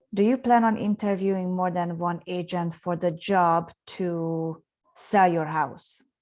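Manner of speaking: pause, then confident falling tone on sell your house. Asked to repeat a question for a home seller, confident, downward tone. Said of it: "Doesn't that sound way more confident".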